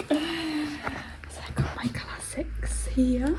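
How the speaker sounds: barely audible whisper, very slow and drawn out. Showing off a bookcase of classics: whispering. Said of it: "I don't know why we're whispering".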